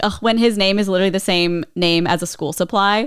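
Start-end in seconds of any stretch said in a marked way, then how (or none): none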